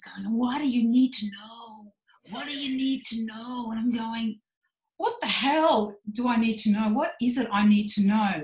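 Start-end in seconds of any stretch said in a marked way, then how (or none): 0.4-3.7 imitated American accent. Quoting a guy talking in his ears, imitating an American accent. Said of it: "he's got his American accent on".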